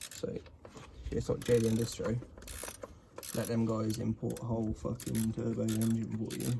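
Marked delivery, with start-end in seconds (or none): 1.1-6.5 soft, low-volume mumble under the breath. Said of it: "The way you mumbling is like".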